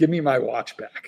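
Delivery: put-on scary dad voice. Speaker retelling what his dad said to him, in scary dad voice. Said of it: "he used scary dad voice".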